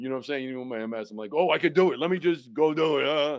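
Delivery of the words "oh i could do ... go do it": mock, very loud, high, all-fired-up excited burst. Retelling how one feels with MS at first: imitating own excitement. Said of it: "get all excited".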